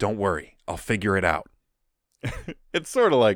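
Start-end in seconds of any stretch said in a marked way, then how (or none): 0.0-1.5 put-on whisper, lower pitch. Retelling a scene where Sokka reassures Zuko, imitating Sokka whispering. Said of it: "he whispers to him".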